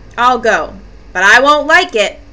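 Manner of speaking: plain reading voice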